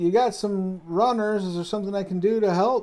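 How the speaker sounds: friendly, loud, high farmer voice shouting. A farmer runs over and calls to the overseer captain: farmer shouting. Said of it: "farmer runs over and shouts".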